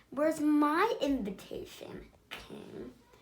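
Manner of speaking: put-on dreadful slow high hissing old fairy voice, menacing. Reading a fairy tale, the thirteenth fairy speaks from the doorway: terrible hissing fairy voice. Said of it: "The fairy's terrible voice hissed".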